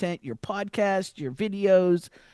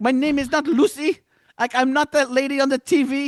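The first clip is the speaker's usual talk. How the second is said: put-on high, indignant, offended voice in thick French accent; 8 semitones higher, 6 dB louder than usual. Speaker quotes a woman the dad's family renamed, imitating Lucette's thick French accent. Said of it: "she had that thick French accent".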